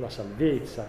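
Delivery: salvezza leaned on, with a falling close.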